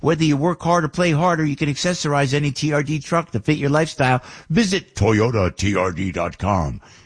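on-air radio announcer voice. Reading an ad for ToyotaTRD.com, radio voice. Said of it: "That's my radio voice".

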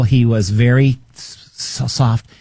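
plain

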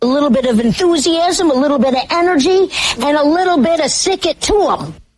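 very high, gushing, excited, peppy cartoon mom voice. Repeating a politician's speech line, doing a Marge Simpson voice. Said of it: "I know I don't usually do impressions".

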